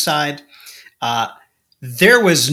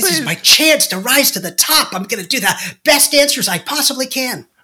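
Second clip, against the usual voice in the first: put-on eager, anxious voice with higher pitch; 11 semitones higher than usual. Acting out the intern who volunteers to answer questions: imitating an eager anxious intern. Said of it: "some anxious intern who's like".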